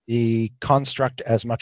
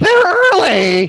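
shrill, very loud, high blood-choked gurgle; 10 dB louder than usual. Narrator voicing a character heard through sounds of gushing blood, gurgling through blood. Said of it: "through sort of sounds of gushing blood".

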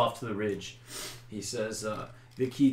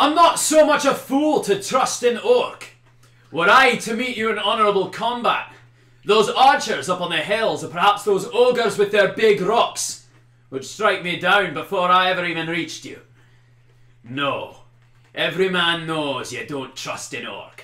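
very loud, high, shrill yelling; 9 semitones higher, 13 dB louder than usual. Storyteller voicing a worried leader who shouts out over the field, shouting. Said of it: "he shouts".

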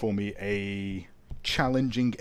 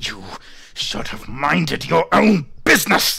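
high-pitched loud hissing; 6 semitones higher, 6 dB louder than usual. Antares, his ribcage squished, speaks at you: hissing as Antares. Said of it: "Antares hisses at you".

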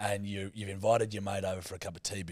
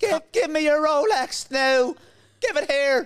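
fake Irish accent, much higher and louder; 13 dB louder than usual. Joking about disguising the voice to snatch a Rolex; high-pitched Irish accent. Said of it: "You'd think it was a high-pitched Irishman".

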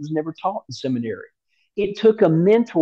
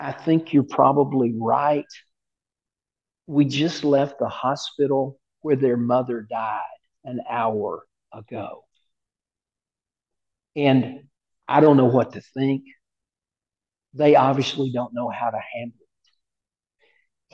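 mild, bewildered, gentle and grieving voice; 4 semitones lower than usual. Retelling a man's reply to a complaint on a subway: imitating a soft voice. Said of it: "he says in a soft vo-, voice".

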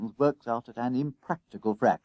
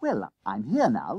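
ordinary delivery, nothing marked

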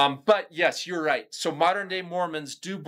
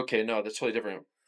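fast, soft, dismissive brush-off. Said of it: "They're like".

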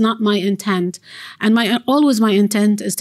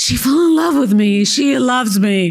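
mock, acted-out gasping; 3 semitones higher than usual. Describing how a man reacts when a woman smiles at him, mock gasping.

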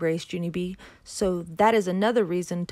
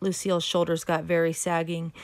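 plain

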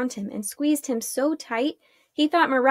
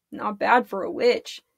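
ordinary delivery

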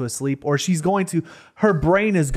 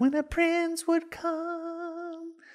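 very high, hushed, "come" stretched out; 9 dB quieter than usual. Quoting how she said the line: super high voice. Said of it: "I'm doing super high voice".

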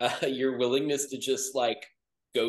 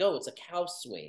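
dry, sarcastic throwaway delivery; 4 semitones higher, 6 dB quieter than usual. Retelling someone's reply to a confused man's question, retelling a sarcastic remark. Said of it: "someone just sarcastically was like".

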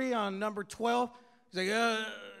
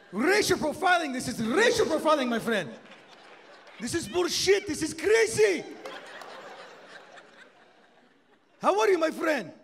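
pitched-up voice of a Middle Eastern man; 5 semitones higher, 4 dB louder than usual. Retelling a man who pauses and grunts: imitating Middle Eastern man. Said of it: "They pause and they grunt".

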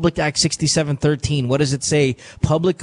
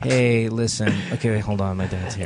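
mocking lazy sultry voice, lower pitch

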